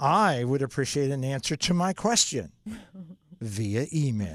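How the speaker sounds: snide, snarky, sarcastic phrasing. Acting out someone who refuses to talk on the phone, mock-snarky tone. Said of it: "The snarky tone brought to you by".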